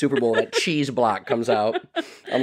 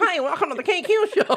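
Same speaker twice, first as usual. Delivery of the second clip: put-on very high, slow, falcon-like young girl voice. Showing how their own recorded voice sounds: high girlish voice like a falcon. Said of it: "Sounds a bit like a falcon".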